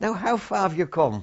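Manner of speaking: Irish brogue. Quoting the father of the regiment addressing the speaker's group, in an irish brogue. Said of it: "He had a lovely Irish brogue".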